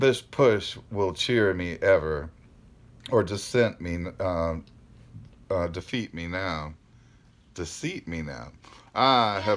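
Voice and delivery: ordinary talk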